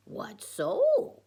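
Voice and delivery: high-pitched puppet voice. Retelling how Dwight answered with his puppet, in his Yoda voice. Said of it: "Asked Dwight in his Yoda voice with his puppet".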